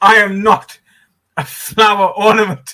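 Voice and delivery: earnest, sincere, genuine declaring tone. Teasing the other speaker about how they said it, in a mock earnest declaration. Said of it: "like you were genuinely declaring that statement".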